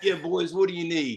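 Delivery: put-on Chicago-accented voice. Retelling the bartender greeting them as they walk up, in a Chicago accent. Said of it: "he goes in that Chicago accent and says".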